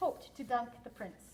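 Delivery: ordinary delivery, nothing marked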